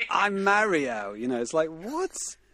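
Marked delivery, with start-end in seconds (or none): 0.1-1.1 put-on East London accent, loud and high-pitched. Describing a British version's voice actor, doing Mario in an East London accent. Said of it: "East London is like".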